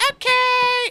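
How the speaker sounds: put-on very high, loud, happy, grinning child voice.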